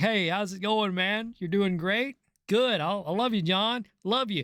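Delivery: friendly, chummy, buddy-buddy tone. Retelling how the boss talks to a favored worker: imitating a friendly boss. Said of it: "he looks at you and he's like".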